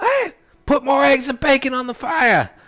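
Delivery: booming, very loud, shrill high-pitched yell. Describing a waitress who shouts behind the counter, imitating a waitress shouting. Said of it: "this loud, forty year old waitress who shouts out".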